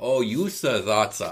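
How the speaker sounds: put-on alien creature voice. Acting out an imagined scene with Jar Jar Binks: Jar Jar Binks voice. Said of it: "including the way he speaks".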